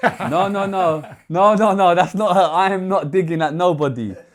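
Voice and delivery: laughing, loud and high.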